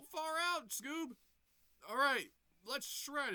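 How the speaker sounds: very high, loud, called-out put-on voice. Retelling a cartoon avalanche scene: imitating Shaggy. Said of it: "Shaggy's like".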